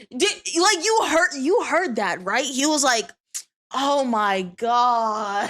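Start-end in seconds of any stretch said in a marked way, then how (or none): 3.7-5.5 exasperated, irritated groan, "God" drawn out. Retelling what a game character just said: imitating someone irritated. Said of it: "why is bro getting irritated?".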